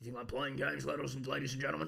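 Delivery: rough, creaky pundit voice, declaiming. Joking about getting violent over a creaky chair: Alex Jones impression. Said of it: "I'm gonna start sounding like Alex Jones".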